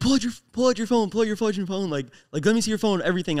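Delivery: ordinary delivery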